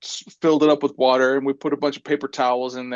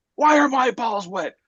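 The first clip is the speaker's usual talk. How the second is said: put-on panicked yell, higher; 9 semitones higher than usual. Retelling how a friend woke up in a panic, imitating someone yelling. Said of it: "he starts yelling".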